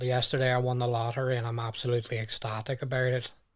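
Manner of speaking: gloomy, depressing accent with downward-falling tune. Showing how an accent makes happy news sound gloomy: depressing downward-falling accent. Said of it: "you cross the border and you go down like that, ... it just sounds like really depressing".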